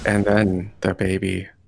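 play-acted, slow, flat, emotionless deadpan. Mocking a voice actor's flat line reading: imitating a deadpan delivery. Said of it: "her emotion is like".

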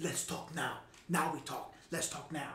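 soft, hushed whisper, very close. Retelling what one man whispered in another's ear during a fight, retold whisper. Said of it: "he's whispering in his ear".

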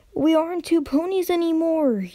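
high-pitched yell, loud enough to carry. Reading a pony yelling over a filly's shouted nonsense so the other can hear. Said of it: "yelled Twilight".

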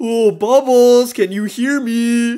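eerie, haunting, spooky ghost voice. The speaker pretends to be a ghost inside the walls to troll someone: pretending to be a ghost. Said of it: "I'm gonna pretend to be a ghost".

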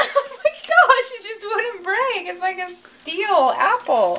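high, slow laughing in disbelief.

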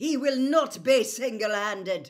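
very loud, high, outspoken declaring tone. A narrator reads a professor cutting into a confrontation, said loudly. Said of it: "said Professor McGonagall loudly".

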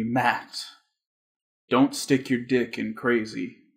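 quiet, hushed, soft half-whisper. Retelling a friend's dying words: imitating a friend's half-whisper. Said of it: "he whispered to me".

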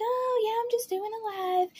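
weird, very high-pitched put-on voice. Imitating how Eugenia greets viewers on her live streams: imitating Eugenia's high-pitched voice. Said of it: "really high-pitched voice that she puts on".

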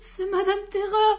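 high, loud, frightened stammer, trembling all over. Reading a story, a character hiding under his bed answers another's question, stammering and trembling. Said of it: "bégaya Monsieur Peureux, tremblant de tous ses membres".

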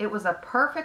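ordinary delivery

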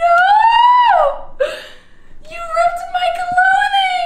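very high, loud, laughing yet upset voice. Scolding someone who ripped your clothing, laughing but really upset. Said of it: "I'm laughing, but I'm really upset".

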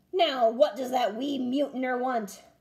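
insistent, demanding tone. Braidbeard, as the baby gets fussy again, demanding. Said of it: "Braidbeard demanded".

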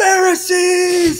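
piercing, very loud, very high shriek. Retelling someone screaming at a youth group: imitating someone screaming. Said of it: "he just starts screaming at them".

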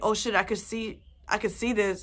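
ordinary talk, nothing marked

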